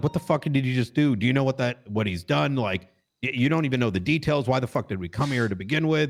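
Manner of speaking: play-acted contained, heated, mild yelling rant. Retelling how he yelled at Axel, retelling his own yelling. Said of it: "I'm I'm yelling at Axel".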